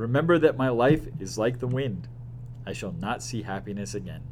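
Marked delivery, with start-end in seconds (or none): none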